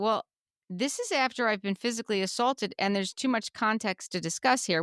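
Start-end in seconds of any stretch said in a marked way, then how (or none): none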